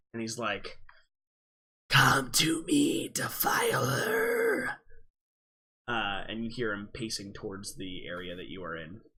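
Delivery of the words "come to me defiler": very slow, dry, raspy heavy-smoker voice. Narrating a game, voicing a figure pacing toward the players, in a raspy, dry smoker's voice. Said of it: "this kind of raspy, dry".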